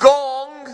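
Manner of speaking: each syllable deliberately stretched. Sharing a favourite word, the speaker says it again: said slower. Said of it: "Let me say it slower".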